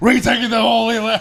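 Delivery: shouting at the top of the lungs.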